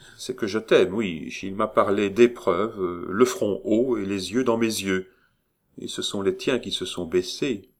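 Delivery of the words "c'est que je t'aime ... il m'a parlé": usual speaking voice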